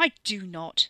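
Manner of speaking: loud snarling delivery. Reading a story where a character snaps back: snarling. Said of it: "Ricky twisted around with a snarl".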